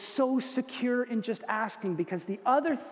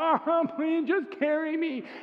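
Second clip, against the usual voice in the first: put-on whining child's voice, high and drawn out; 5 semitones higher than usual. Retelling a tired four-year-old begging to be carried: imitating a whiny child. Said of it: "they're whiny and they're kinda sucky about it".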